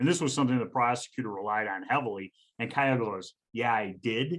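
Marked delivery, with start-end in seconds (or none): 3.5-4.4 mock, dry, sarcastic, scoffing tone. Retelling a reply to an accusation from footage: imitating a sarcastic reply. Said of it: "it was so clear that he was being sarcastic".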